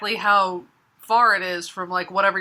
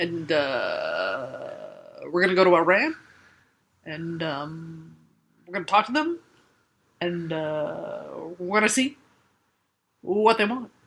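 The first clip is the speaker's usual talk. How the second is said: put-on halting, stop-start delivery with filler sounds; 3 semitones lower, 4 dB quieter than usual. Speaker acts out how the president talks, after describing his delivery: halting president impersonation. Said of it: "did you like my imperson- my impersonation?".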